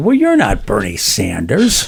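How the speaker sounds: put-on very disappointed, deflated, low swooping tone. Retelling a man who ran over expecting someone else, retelling a disappointed remark. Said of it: "in a very disappointed tone".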